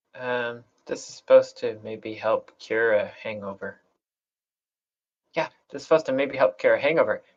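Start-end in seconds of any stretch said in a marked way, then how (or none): 5.3-7.1 words tumbling out at top rapid-fire speed. Playing Cookie, answering a question about what's going on, talking really fast. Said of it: "And I am talking really fast".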